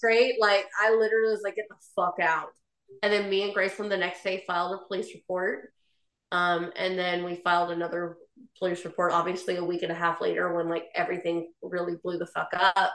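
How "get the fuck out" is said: put-on demonic voice, quieter. Retelling throwing him out of the house: imitating own satanic voice. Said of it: "I've never heard a satanic voice come from my body".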